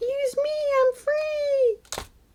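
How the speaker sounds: very high, slow squeal with drawn-out "free". Voicing a loose orange thread that wants to be used: squealy voice. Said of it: "orange things have a very squealy voice".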